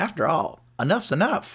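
down-home, homespun, folksy delivery. Retelling a character looking at the camera: imitating the folksy character. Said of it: "That was a good impression".

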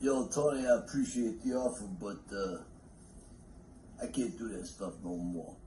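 very soft, breathy, very quiet character voice. Playing a scene where Rocky turns down an offer: Rocky voice. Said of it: "my Rocky impression".

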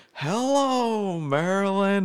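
put-on slow slurred voice. Speaker retelling what grandfather said to the gathered grandkids, imitating his slow slurring way. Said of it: "in his slow, slurring way".

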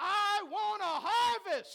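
shouting at the top of the lungs. Speaker urging the audience to stand up and shout, shouting at full volume. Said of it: "shout to the top of your lungs".

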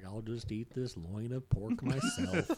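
mopey, swooping sad-sack cartoon donkey moan. Quoting Rose's line from the story being retold: Eeyore voice. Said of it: "That was my Eeyore voice".

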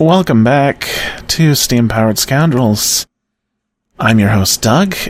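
slightly quiet, softly soothing voice. Podcast host opening the show while a child sleeps, slightly quiet soothing voice. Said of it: "I'm trying to be slightly quiet".

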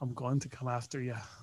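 very quiet, hushed voice, faintly Irish. Joking along with a movie threat line: Liam Neeson voice. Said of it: "It's just a subtle Irish accent".

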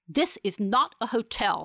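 sudden, snapping, stern tone. Fanny snaps at March, who demands to be accommodated: suddenly stern snap. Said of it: "snaps Fanny in a suddenly stern voice".

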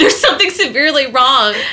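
mock frightened, high, rushed, rattled-off panicked voice. Retelling a friend choking, voicing her thought: imitating someone's frightened panic. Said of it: "I saw the fright in her eyes".

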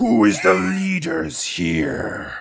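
put-on undead creature voice. Narrating a scene as an undead creature steps forward; undead creature voice. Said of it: "undead creature steps forward".

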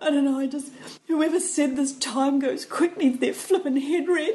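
play-acted, high-pitched, tearful sobbing through crying. Retelling her answer when asked what's wrong: retelling her sobbing. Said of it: "And I am sobbing".

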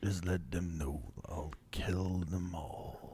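very quiet, calm, soft, deep gravelly bass voice. Speaker quoting how he always says it, imitating a very deep low voice. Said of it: "avec sa petite voix, Red basse, puis comme super grave".

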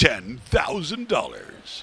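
swooping commercial announcer read. Imitating the announcer at the shoot-off: Maverick commercial announcer voice. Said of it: "Sounds like the guy from the Maverick commercials".

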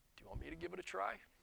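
very quiet, soft-spoken, hushed voice. Telling Dad what he said back then, very quiet voice. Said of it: "in a very quiet voice goes".

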